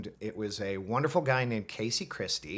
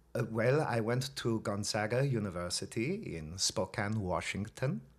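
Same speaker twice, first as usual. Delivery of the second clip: genuine German accent, played straight. Answering a question about college, asked to use an authentic German accent. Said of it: "Let's start with authentic".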